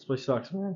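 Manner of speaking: soft complaining voice, cracking partway through. Answering a question about his resident assistant role, with a voice crack. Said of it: "Nice voice crack".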